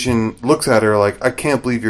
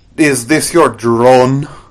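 bad put-on Russian accent. Imitating an actress's bad Russian accent that almost sounds Irish. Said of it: "she has that really bad Russian accent that almost sounds Irish".

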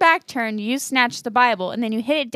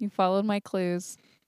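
low put-on voice; 4 semitones lower, 7 dB quieter than usual. Redoing the line after being told to sound deeper, in a deeper voice. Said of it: "You gotta have a more deep voice than that".

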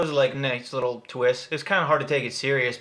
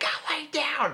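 mock very high, shrill scream. Describing a horror film, the speaker acts out the mom yelling at her girls, retelling a scream. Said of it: "She's like screaming for the girls to get back in bed".

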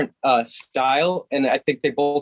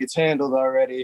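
fake gangster boss voice. Imitating Larry answering a problem like a mafia boss: imitating Larry as a mafia boss. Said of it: "like, the mafia boss".

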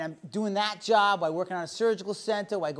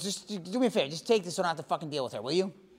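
rough, imitated voice; 3 semitones lower than usual. Retelling a friend dropping off groceries: Joe impersonation. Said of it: "this is my best Joe's impersonation".

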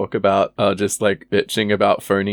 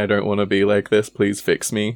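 ordinary delivery

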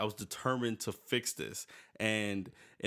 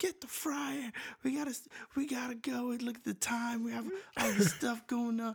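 put-on very high, frantic, panicked voice; 14 semitones higher than usual. Speaker retells their mom rushing them to get the fryer, imitating mom freaking out. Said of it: "my mom's freaking out".

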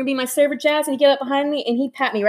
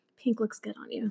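creepy, very soft hushed whisper, very close up; 2 semitones lower, 13 dB quieter than usual. Retelling what a male coworker whispered in her ear: imitating someone whispering. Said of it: "and just whispers in your ear".

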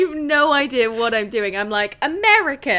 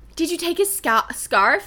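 attempted, pitched-up American accent, leaning on scarf; 5 semitones higher than usual. Retelling what Sabrina asked in a scene, Sabrina in an American accent. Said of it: "I tried to do an American accent for scarf".

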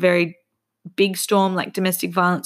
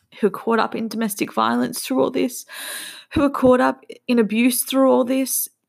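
fast, heartfelt, emotion-laden outpouring; 5 semitones higher than usual. Pausing mid-sentence to admit it to listeners, getting emotional. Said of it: "I know I'm getting emotional".

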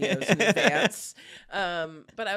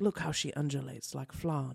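low, hushed, creaky, murmured documentary narrator voice; 4 semitones lower, 7 dB quieter than usual. Imagine what he could say about you without hurting your feelings, in a David Attenborough impression. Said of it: "He could be like".

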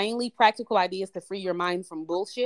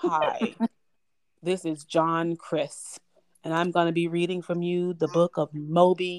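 slow, generic audiobook narrator voice.

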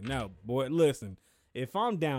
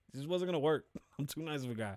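usual speaking voice

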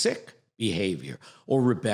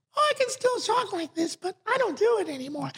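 put-on very high, small, tiny little voice. The speaker acts out someone answering a friend who notices the voice change, in a small little voice. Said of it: "You had a little voice like this".

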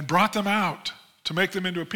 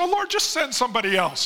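high, swooping, mock complaining, pleading whine; 6 semitones higher than usual. Retelling the reply of the one told to get up and go: imitating whining. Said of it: "quit whining".

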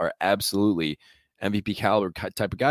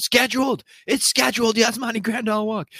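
mock scream with a much higher pitch; 3 dB louder than usual. Recalling a ballgame, reenacting screaming at everybody in the section. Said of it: "I was screaming at everybody in the section".

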